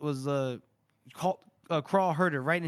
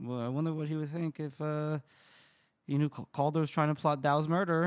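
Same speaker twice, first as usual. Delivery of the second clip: ordinary talk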